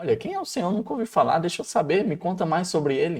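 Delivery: play-acted inquisitive tone. Imagining how the pharaoh asked who the Lord is: imitating a curious tone. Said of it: "Será que foi de curiosidade?".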